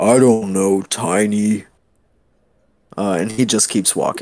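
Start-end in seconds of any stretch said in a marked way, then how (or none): 0.0-1.7 halting, broken-speech lizard creature voice, slow and stretched. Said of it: "in very broken common".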